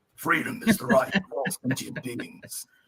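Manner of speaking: low robot hero voice. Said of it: "trying to get my Optimus Prime voice down".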